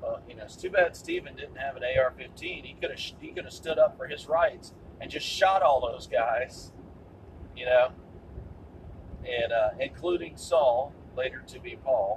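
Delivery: ordinary delivery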